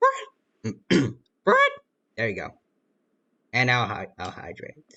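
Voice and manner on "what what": squeaked, very high pitched. Trying again the voice done a while back: Mickey Mouse voice. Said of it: "Let me try doing the Mickey Mouse voice".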